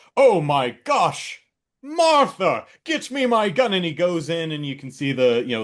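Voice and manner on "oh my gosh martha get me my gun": monocled-gentleman voice, very high, very slow, drawn out. Acting out a film scene: imitating a monocled big game hunter. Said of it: "some guy with a monocle coming out on his balcony and going".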